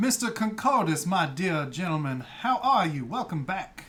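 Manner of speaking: genteel Southern host drawl, wandering between voices. Retelling how he greets Mr. Concordus, doing a Southern Christopher Walken impression. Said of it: "He's Southern Christopher Walken now".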